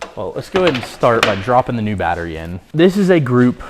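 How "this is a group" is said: effortful, strained voice under heavy load. Dropping a heavy new battery into place while explaining, strained voice. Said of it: "As you can tell by my strained voice".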